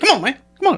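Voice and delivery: very high-pitched voice. Retelling what a fellow comic said after a silent crowd: imitating Will Thomas's voice. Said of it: "I like to do his voice 'cause I, he talked like this".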